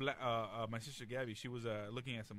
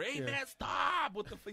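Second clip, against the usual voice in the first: mock, very high, loud, short-tempered, fed-up shout; 13 semitones higher, 6 dB louder than usual. Retelling how Danny reacts when he has had enough: imitating Danny losing his temper. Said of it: "'cause Negro has a very short temper".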